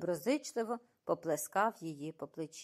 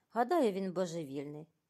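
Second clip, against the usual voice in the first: plain reading voice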